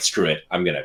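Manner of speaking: ordinary talk, nothing marked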